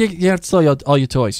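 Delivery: offhand, nonchalant tone. Retelling how Kate casually tells him she sold his stuff: imitating Kate, nonchalant. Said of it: "She just sells his stuff so nonchalantly".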